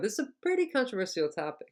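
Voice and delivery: heavy stress on the word pretty. Teaching the intonation of adverbs in an example sentence, stress on pretty. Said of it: "these adverbs are usually stressed".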